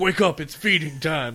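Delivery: loud yelled call. Speaker retells waking their beagle at feeding time, retelling a yell at a dog. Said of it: "I just yell at my I yell at my beagle".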